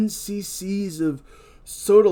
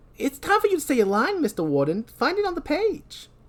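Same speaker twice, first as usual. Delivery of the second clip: put-on New York accent, pitched very high; 10 semitones higher than usual. During a script read, prompting the warden to say his line: New York accent. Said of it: "I was always doing this voice".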